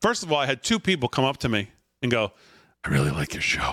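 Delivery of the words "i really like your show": quiet, hushed, confiding and secretive whisper. Retelling how two people at back to school night praised the show: imitating someone whispering. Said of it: "are you whispering 'cause you don't want anybody else to hear?".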